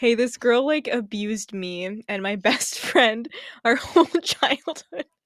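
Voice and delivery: laughing while talking, laugh-crying. Mocking a character's complaint to another speaker, laughing while talking. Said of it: "I'm crying".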